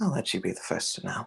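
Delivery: muttered under breath. A game master voices a character walking away from the players, muttered under his breath. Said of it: "just under his breath".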